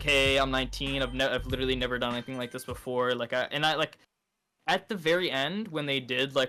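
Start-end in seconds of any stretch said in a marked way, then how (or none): none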